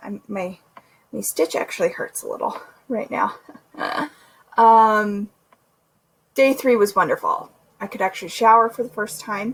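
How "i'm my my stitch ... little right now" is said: soft, breathless, nearly voiceless. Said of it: "I'm getting out of breath".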